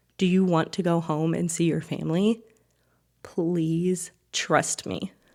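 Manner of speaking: whispering voice. Retelling an aid worker speaking quietly to hostages: retelling a whisper. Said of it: "in, like, a whispered tone".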